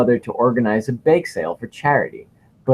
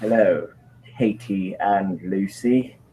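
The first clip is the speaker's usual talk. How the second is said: put-on Cockney accent, much lower; 4 semitones lower, 4 dB quieter than usual. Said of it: "it was cockneyed".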